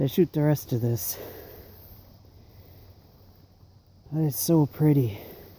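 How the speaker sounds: out of breath. Showing a view after hiking down a frozen hillside: out of breath. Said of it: "I am definitely out of breath".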